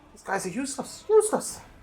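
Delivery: put-on very high-pitched old granny voice. Voicing a granny in the corner who scorns the group: granny character voice. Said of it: "the granny in the corner is like".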